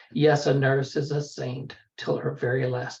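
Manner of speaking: ordinary delivery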